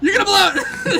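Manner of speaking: shrill, cutting, harsh shout, very high. Retelling a cartoon scene where Grandpa yells at his son: imitating Abe Simpson shouting. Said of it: "It's so sharp".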